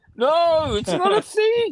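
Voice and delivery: high-pitched yell, climbing in pitch. Retelling a phone call about food, the speaker imitates Kat yelling back. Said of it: "Kat's always yelling back at me".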